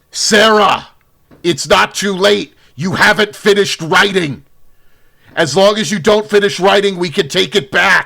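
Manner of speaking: loud, high-pitched shout projected across a room. In a role-playing scene, as the second youngest one calling to Sarah, shouting out. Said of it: "The second youngest one shouts out".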